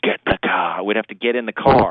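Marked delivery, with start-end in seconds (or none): 0.0-0.8 breathy villain voice, audible breathing around the words. Retelling a father's Saturday morning wake-up order, imitating dad as Darth Vader. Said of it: "just with his breathing".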